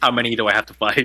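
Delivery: low, muttered aside under the breath. Playing a character on guard as someone approaches: muttering under breath. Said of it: "under my breath say".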